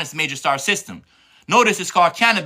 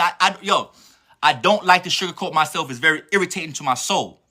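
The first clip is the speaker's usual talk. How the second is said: ordinary delivery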